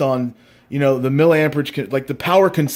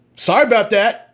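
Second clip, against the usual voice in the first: high, mock insincere, condescending talking-down tone; 7 semitones higher, 3 dB louder than usual. Retelling how he apologized, mock-condescending, insincere apology. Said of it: "in a very condescending and totally insincere".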